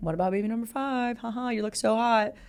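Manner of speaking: eager, thirsty, flirty, gushing come-on voice. Retelling a husband's thirsty comments on his wife's Instagram posts: imitating Russell Wilson's thirsty flirting. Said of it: "thirstily leaving comments on her Instagram post".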